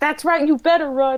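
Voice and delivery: high, rapid shouting in rat voice. Playing a character yelling at fleeing rats: yelling in rat. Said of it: "I'm gonna yell in rat".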